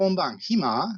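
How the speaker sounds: hima said with rising, lifted question-like intonation. Japanese lesson, marking a question by intonation alone: rising pitch at end of hima. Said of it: "só com a entonação a gente já expressa que é uma pergunta".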